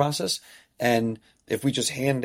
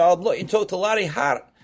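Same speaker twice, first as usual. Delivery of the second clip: put-on Scottish accent, pitched up; 6 semitones higher, 3 dB louder than usual. Retelling Bobby Craig phoning about travel soccer, in Bobby Craig's Scottish accent. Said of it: "he's had a Scottish accent. He said".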